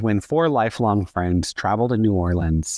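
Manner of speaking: ordinary delivery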